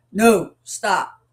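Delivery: plain, level, matter-of-fact, no-doubt commanding tone. Explaining three voice tones, the speaker demonstrates the matter-of-fact command tone. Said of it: "the command tone, which is just matter of fact".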